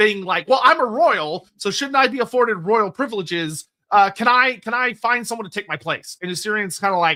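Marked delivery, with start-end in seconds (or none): none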